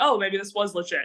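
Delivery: ordinary talk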